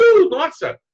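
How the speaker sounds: high, loud, excited, amazed exclamation.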